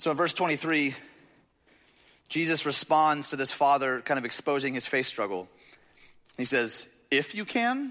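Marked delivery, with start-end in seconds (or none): 7.1-7.9 sassy, knowing, pitched-up tone. Retelling a reply in a sermon, voiced as sassy Jesus. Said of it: "I like to call this sassy Jesus".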